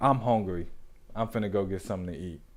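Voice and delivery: sudden calm, offhand, low, soft, fast, nonchalant tone.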